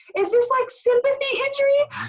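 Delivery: mock very high shriek through tears. Recounting confronting her injured husband, retelling a scream, in tears. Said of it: "I'm screaming at him".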